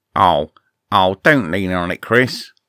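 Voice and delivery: animated cat character voice. Asked about a favourite animated cat, the speaker does a Henry's Cat impression. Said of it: "he sounds like this".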